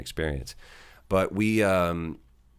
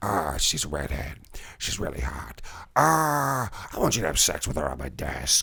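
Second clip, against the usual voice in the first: over-the-top put-on movie villain voice; 2 semitones lower than usual. Quoting a movie scene: over-the-top Al Pacino impression. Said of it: "Al Pacino is just, like, turning it all the way up to eleven".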